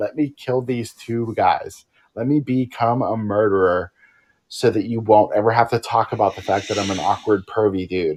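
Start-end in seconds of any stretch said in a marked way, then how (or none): none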